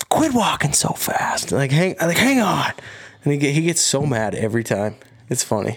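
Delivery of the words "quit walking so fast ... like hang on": mock loud whisper-yell, higher pitch. Retelling how a hunting partner calls ahead during archery hunts: imitating a whisper-yell. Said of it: "trying to whisper yell".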